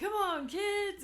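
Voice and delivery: boisterous dad shout, very loud and high. Recalling a road show where the other speaker played the dad: imitating a loud boisterous dad voice. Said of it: "That loud, boisterous voice".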